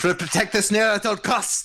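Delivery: high, shouted dwarf character voice. Voicing a dwarf ordering his allies in battle: shouting dwarf.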